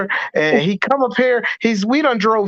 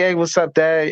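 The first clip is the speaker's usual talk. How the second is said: put-on relaxed, chill, laid-back voice, lower; 5 semitones lower than usual. Imitating the son greeting his dad: imitating a laid-back son. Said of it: "he laid back".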